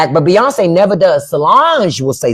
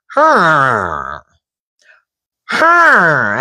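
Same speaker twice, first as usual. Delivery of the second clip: imitated rattling, dying animal breath. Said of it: "a new sound that I hadn't heard before".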